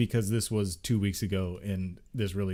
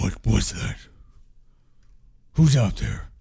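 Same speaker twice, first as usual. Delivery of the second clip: loud, low-pitched voice; 7 dB louder than usual. Narrating an unseen figure calling out at rustling goblins: deep voice. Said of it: "you hear a deep voice says".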